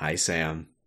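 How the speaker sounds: put-on off-putting tone. Imitating a coworker's bare chat greeting: imitating an off-putting greeting. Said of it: "I don't like the way you said that".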